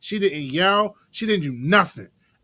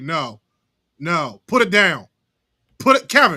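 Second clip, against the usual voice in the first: nagging, fussy mom voice with swooping pitch; 3 dB louder than usual. Speaker picturing a recording in his mother's voice, imitating mother fussing. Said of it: "just her fussing at me".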